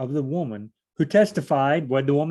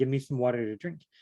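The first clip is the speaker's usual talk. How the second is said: ordinary talk, nothing marked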